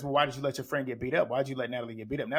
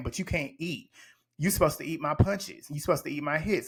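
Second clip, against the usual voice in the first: put-on chuckling while talking. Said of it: "E T then starts laughing and chuckling".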